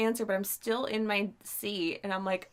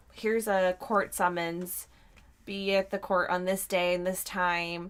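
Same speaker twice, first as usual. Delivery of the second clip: ordinary talk, nothing marked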